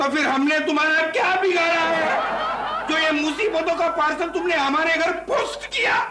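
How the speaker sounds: comic, angry, high-pitched shouted rant.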